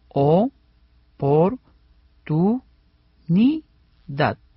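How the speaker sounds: slow, syllabified, syllable by syllable.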